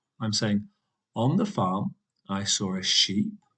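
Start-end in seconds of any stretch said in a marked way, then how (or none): 2.3-3.3 pitch rises on the word sheep. Teaching list intonation, voice going up on a list item: rising pitch on 'sheep'. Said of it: "you can hear that my voice is going up".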